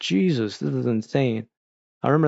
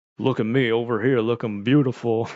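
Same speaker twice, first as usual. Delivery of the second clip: conceited cartoon hero voice; 2 semitones lower than usual. Imitating a cartoon character who talked like Johnny Bravo: Simon Belmont talking like Johnny Bravo. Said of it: "he talked like, uh, Johnny Bravo almost".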